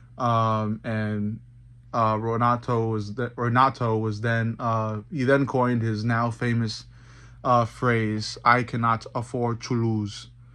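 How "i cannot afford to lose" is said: put-on Portuguese accent in English. Quoting Renato Moicano's famous phrase, Renato Moicano impression, Portuguese accent. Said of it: "that's my best Portuguese accent when saying that".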